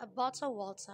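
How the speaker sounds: British English pronunciation. Explaining how the phrase is said in British English, British accent. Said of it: "Contoh aksen British / In British, I think it says".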